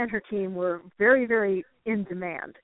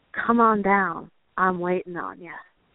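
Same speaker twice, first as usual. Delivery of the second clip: put-on syrupy southern accent, old woman's voice. Retelling a voice captured on the way down to the basement, in a syrupy southern accent. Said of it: "the syrupy southern accent".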